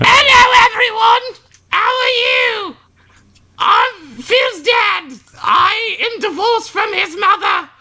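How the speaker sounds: very high, silly comic sketch character voice. Playing the father character greeting everyone, in a Monty Python character voice. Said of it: "always speaks like a Monty Python character".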